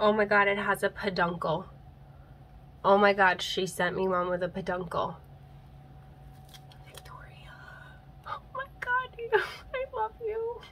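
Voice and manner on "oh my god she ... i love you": overwhelmed, soft, on the verge of crying. Receiving a Hoya plant that Victoria sent, on the verge of tears. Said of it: "I'm literally like gonna cry right now".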